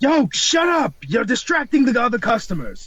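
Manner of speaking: full-on, high-pitched yell. In a role-played scene, a character tells off a customer, yelling. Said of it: "I didn't ask you to yell at me like that".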